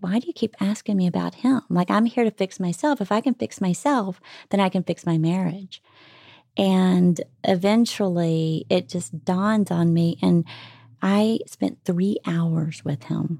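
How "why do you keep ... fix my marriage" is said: mildly annoyed, a little angry, irritated. Retelling own words to a psychiatrist: retelling being a little angry. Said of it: "I'm getting a little angry".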